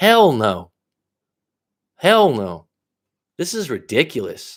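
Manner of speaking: heated, fed-up outburst with swooping pitch. Responding to a listener's story about a niece and her fiance, worked up. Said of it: "I don't I don't get like this often".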